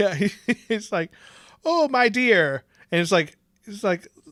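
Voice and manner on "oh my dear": high, slow, bad mock Irish accent. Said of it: "could not do a fucking Irish accent".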